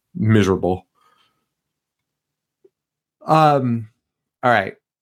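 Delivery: talking through a yawn. Recapping a story late at night, the speaker talks while yawning. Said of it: "Sorry, I'm yawning".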